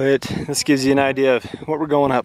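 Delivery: winded, breathless, short of breath. Climbing toward a pass, showing the viewer the route ahead, winded. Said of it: "I'm winded".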